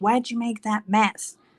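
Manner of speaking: put-on upset, scolding child's voice. A parent retells their son scolding his younger brothers, imitating an angry child. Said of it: "he gets so angry, and he's like".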